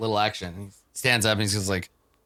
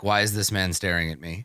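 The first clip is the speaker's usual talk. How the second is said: normal talking voice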